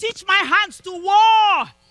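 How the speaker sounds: roaring war cry, very loud and high. Leading listeners to cry out the sermon title to God: roaring like going to battle. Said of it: "say it with a roar".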